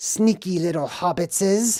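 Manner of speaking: bad attempt at a creature voice. After saying he can't do it, the speaker attempts Gollum's voice. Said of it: "I can't do his voice".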